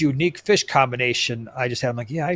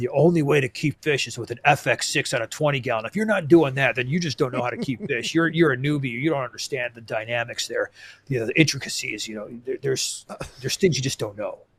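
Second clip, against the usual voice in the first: lecturing, know-it-all hobbyist expert tone; 3 dB quieter than usual. Fish-keeping podcast host imitates other hobbyists, in a know-it-all fishkeeper voice. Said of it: "I love the voice you use when when you do that".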